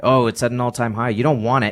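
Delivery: put-on scoffing, belittling, dismissive tone. Acting out how others will mention the all-time high, mock-disparaging tone. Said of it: "They're going to say that in a disparaging way".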